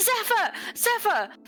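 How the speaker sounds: yelling out. Playing a character who sees a companion carried off, screaming a name. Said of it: "She immediately screams".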